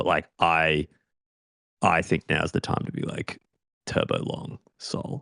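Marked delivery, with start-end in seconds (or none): 1.8-5.2 dropped, low, hushed voice, almost a whisper. Sharing a trading play he is scared to say out loud, lowered voice. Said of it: "I lowered my voice as I said that".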